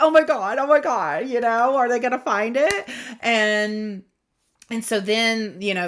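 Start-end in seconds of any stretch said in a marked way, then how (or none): 0.0-2.9 put-on loud, giddy, bursting excitement. Retelling waiting for others to open a surprise box: imitating own past excitement.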